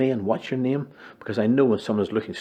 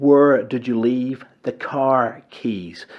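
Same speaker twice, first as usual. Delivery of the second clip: very slow, drawn-out, loud delivery; 3 semitones higher, 5 dB louder than usual. Demonstrating how people repeat a question to someone confused, very slow speech. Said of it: "we repeat the question very slowly".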